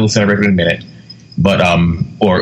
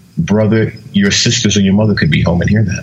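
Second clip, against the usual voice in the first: put-on, very loving, gentle, tender fatherly tone. Retelling the speaker's father at the door about loud music: imitating a loving tone. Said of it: "he just simply says in a very loving tone".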